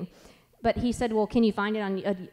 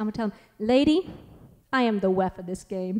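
put-on lisping voice.

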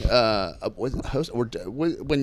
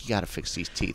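put-on concerned teacher voice, lower and quieter; 6 semitones lower, 9 dB quieter than usual. Retelling a waitress's warning about teeth, imitating a concerned teacher. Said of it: "like a good high school teacher".

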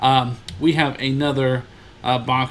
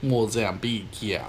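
put-on, fake Caribbean accent; 3 semitones lower, 4 dB quieter than usual. On a podcast, a host tries out an accent for co-hosts; put-on Caribbean accent. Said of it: "That's my best accent so far".

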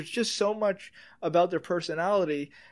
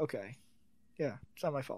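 mock-dismissive tone, lower pitch and quieter; 4 semitones lower, 11 dB quieter than usual. Retelling a guy's reply to another man, mimicking a guy brushing it off. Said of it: "he's just like brushing it off".

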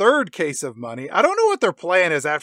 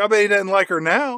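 usual speaking voice

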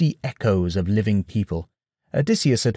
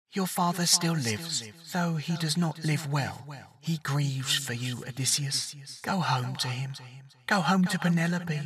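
very quiet, thin, stretched, echoing, faraway voice; 4 semitones higher, 10 dB quieter than usual. Narrating his mother's voice speaking to odysseus, in a thin, echoing distant voice. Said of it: ""Mother?" ... The voice was hers, but it was thin and stretched somehow, and echoed like it came from a great distance away".

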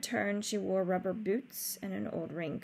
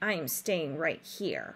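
grouchy grumbling; 4 semitones lower than usual. The rat answers a plan to bring him along, grumbling. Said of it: "grumbled the rat".

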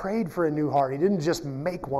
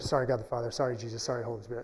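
soft, half-whispered, under the breath; 5 semitones lower, 6 dB quieter than usual. Retelling how Elijah half-whispered apologies to God: imitating Elijah half-whispering. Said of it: "I would hear him whisper".

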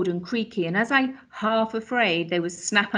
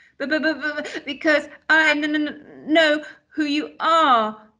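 stuttering, much higher; 7 semitones higher, 3 dB louder than usual. Answering a creepy-looking man who asks why he gasped, stuttering. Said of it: "Steve stuttered".

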